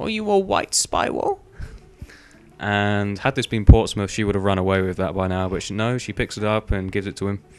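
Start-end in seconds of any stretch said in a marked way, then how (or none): 0.0-1.4 put-on very high, slow little girl voice. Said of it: "So this little girl says".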